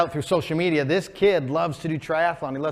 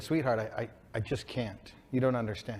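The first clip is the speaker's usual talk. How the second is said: put-on tearful voice, lower and quieter; 5 semitones lower, 9 dB quieter than usual. A father retells what he said to his daughter, retelling a tearful reply. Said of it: "through the tears".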